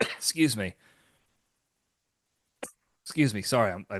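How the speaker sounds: soft, choked-up, spluttering, choking, coughing voice. Speaker describing a warehouse district breaks off mid-sentence, choking on spit. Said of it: "I choking on my own spit here".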